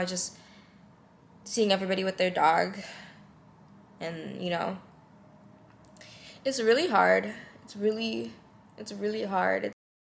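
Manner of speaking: emotional, upset and tearful, near tears. Talking about seeing everyone in the building walking dogs: emotional and tearful. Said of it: "I'm such a mess right now".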